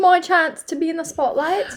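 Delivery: slow, drawn-out, fake British accent. Joking about getting a chance in the spotlight: put-on British accent. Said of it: "I'm sorry about the British accents".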